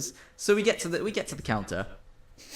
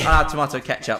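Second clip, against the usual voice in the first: ordinary talk, nothing marked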